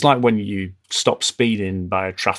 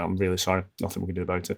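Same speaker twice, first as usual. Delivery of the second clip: put-on flat calm voice, quieter; 7 dB quieter than usual. Imitating someone answering a ranting complaint: imitating someone dead calm. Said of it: "remaining dead calm, they're going".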